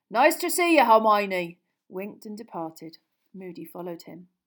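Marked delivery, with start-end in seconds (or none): 0.2-1.6 very loud, big, booming, carrying voice. A man straightens up and greets someone before departing, said loudly. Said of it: "Hagrid said loudly".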